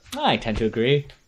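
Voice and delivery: put-on Australian-sounding accent. Agreeing with the other speaker, playfully: Australian-sounding accent. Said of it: "Why'd you sound Australian?".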